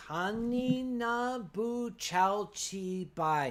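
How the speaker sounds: very slow, clear, carefully enunciated speech. Repeating a phrase so it comes across better, very slow and clear. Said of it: "Let me say it very slowly and clearly".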